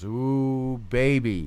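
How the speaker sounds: play-acted dry, teasing sarcasm with a drawn-out ooh. Retelling his wife's reply when offered an exotic dance: imitating a sarcastic reply. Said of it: "she says sarcastically".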